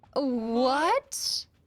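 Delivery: surprised high squeak.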